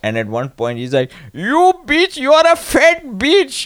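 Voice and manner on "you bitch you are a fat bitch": high, yelling, put-on guru voice. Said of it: "just yelling at models".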